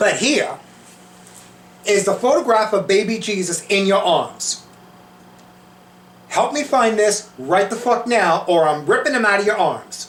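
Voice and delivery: put-on dead serious New York Italian accent. Retelling confronting Saint Anthony, called Tony, in a New York Italian accent. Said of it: "I know I was talking like an Italian from New York".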